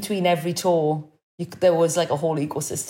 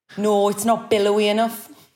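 thick, heavy, strong Geordie accent; 4 semitones higher, 4 dB louder than usual. Two speakers pick trees for each other; one rejects a choice: strong Geordie accent. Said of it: "That was the strongest your Geordie accent's ever been".

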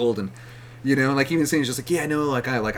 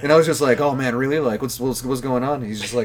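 ordinary talk

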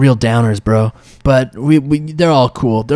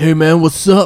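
bro-speak boar voice, higher; 4 semitones higher than usual. Voicing boars who greet the players: boars talking like bros. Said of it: "And they're all like".

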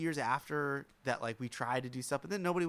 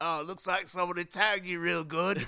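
put-on, smarmy British accent, pitched up; 6 semitones higher, 4 dB louder than usual. Retelling what a friend's uncle said at night: smarmy British accent. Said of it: "a smarmy British guy".

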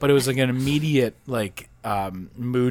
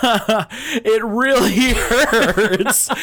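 imitated manic tone, higher and louder; 10 semitones higher, 5 dB louder than usual. Retelling a complaint to mom during an injection, like a maniac. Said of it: "looking at my mom like a maniac".

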